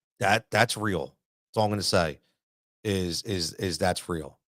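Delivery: soft, choked-up voice catching with emotion. Recalling two phone calls from a coaching career: choked up. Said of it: "a little choked up thinking about it".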